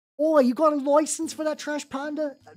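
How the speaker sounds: attempted put-on British accent, fading out. Joking about a license for a trash panda, attempted british accent. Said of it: "any attempt of a British accent immediately faded".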